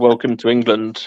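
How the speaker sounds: usual speaking voice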